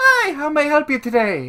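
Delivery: put-on very high, swooping, sing-song Irish accent. Game master voicing a halfling character greeting the players, in an Irish accent. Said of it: "She sounds Irish".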